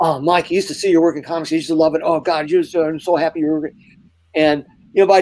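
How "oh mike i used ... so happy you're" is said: mock eager, unbroken, nonstop stream of gushing. Retelling a first meeting with Todd at the studio desk: imitating Todd gushing nonstop. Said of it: "talking nonstop for the first fifteen minutes".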